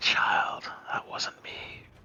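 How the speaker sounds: very faint, barely there whisper. Voicing an unseen speaker answering a player's prayer: very faint whisper. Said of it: "you hear a very faint whisper going".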